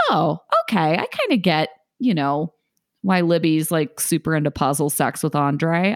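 ordinary talk

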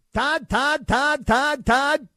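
high, very slow, drawn-out calling voice. Doing a Mel Kiper impression during a draft broadcast: Mel Kiper impression. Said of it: "That's my Mel Kiper impression".

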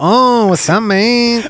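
put-on Latin American accent.

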